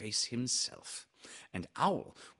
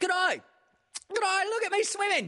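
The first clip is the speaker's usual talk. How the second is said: very high, loud, excited tiny squeak; 7 dB louder than usual. Swimming in the middle of his pool, a character speaks to the others: squeaking. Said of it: "squeaked Roo".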